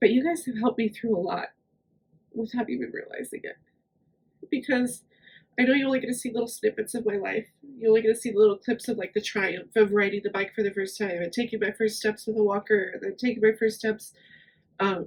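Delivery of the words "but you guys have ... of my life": tearful speech, crying through the words. Thanking the audience for helping through a lot: crying while speaking. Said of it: "I'm just crying my eyes out right now".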